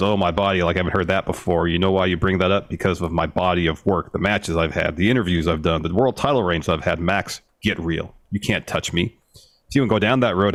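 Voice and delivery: normal talking voice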